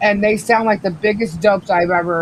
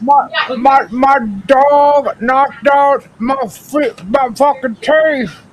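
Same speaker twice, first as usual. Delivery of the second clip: toothless speech, higher and louder; 5 semitones higher, 5 dB louder than usual. Asking listeners to pay attention, speaking with no teeth. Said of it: "I've got no teeth".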